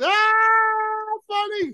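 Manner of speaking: put-on exaggerated outburst, very high, drawn-out "Ah". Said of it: "he's so funny and he's so over the top".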